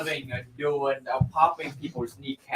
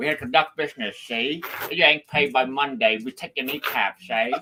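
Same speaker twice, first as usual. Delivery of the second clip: 1930s Chicago gangster voice; 3 dB louder than usual. Repeating an impression of a chicago gangster loan shark. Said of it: "a Chicago gangster loan shark type of deal".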